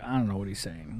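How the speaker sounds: confused, low, very soft mutter under the breath.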